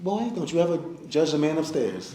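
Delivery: put-on southern accent, charming, pitched high. Retelling a mother's warning not to judge god: imitating mother's southern charm. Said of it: "she told me again with the Southern charm".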